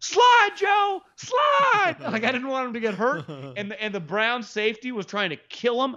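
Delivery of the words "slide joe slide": mock screaming, very high shouted scream. Describing watching a football play, reenacting what he screamed: retelling a scream. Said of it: "I'm screaming like".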